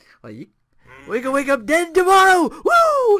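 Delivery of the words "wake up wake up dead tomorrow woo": very loud, high, full-blast woo shout. Joking that an old wrestler is like a cartoon grandpa: Ric Flair impression. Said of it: "Ric Flair's basically Grandpa Simpson".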